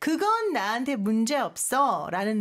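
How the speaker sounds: normal talking voice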